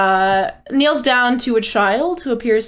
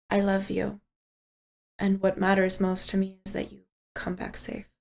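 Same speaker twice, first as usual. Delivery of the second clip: hushed, very quiet whisper; 3 semitones lower, 11 dB quieter than usual. Ariadne kisses the listener's character on the cheek, whispering very quietly in their ear. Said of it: "whispers in your ear, very quietly in Sylvan".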